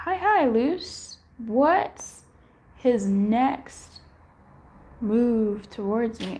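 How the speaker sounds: very slow, drawn-out, word-by-word read-aloud. Reading out someone's question to a guest, very slowly. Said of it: "why did I read that so slow?".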